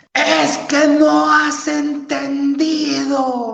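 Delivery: hard, high-pitched, slow shouting.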